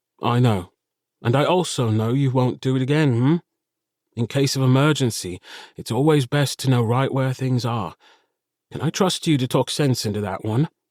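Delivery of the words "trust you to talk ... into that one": ordinary delivery, nothing marked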